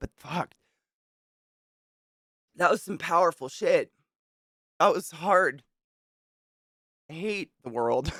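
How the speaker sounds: choked up, teary, near tears. Reacting to a powerful video just watched, choked up, near tears. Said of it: "I'm just a fucking sappy piece of shit".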